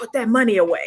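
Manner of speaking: put-on whisper. Retelling a warning whispered in the ear: imitating Jason whispering. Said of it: "Jason was whispering in my ear".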